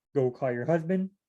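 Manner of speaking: ordinary talk, nothing marked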